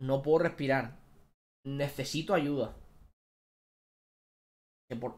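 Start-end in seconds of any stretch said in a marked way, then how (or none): none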